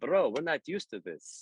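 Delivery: heavy Ukrainian accent, put-on and laid on thick. Retelling what the band members said about his quick guitar grabs: imitating thick Ukrainian accent. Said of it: "with their, uh, thick Ukrainian accents".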